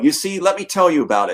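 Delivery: ordinary talk, nothing marked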